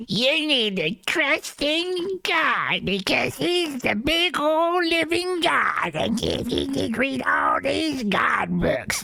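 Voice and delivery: woman's voice, pushed very high. Doing her voice after being asked: imitating her voice. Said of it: "Can you do her voice?".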